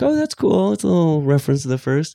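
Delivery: high, quick, delighted, pleasantly surprised aside. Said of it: "I was like".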